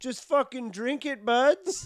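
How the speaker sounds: play-acted shout pitched way up. Retelling how a guy at the back of a show yelled out: retelling a guy's yell. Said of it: "stands up and yells out".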